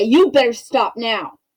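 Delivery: hostile, forceful, aggressive, harsh delivery. Showing a class how an aggressive demand to stop sounds: aggressive tone. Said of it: "that's aggressive".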